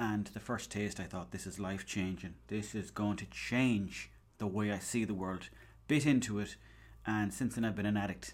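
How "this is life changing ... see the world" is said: ordinary talk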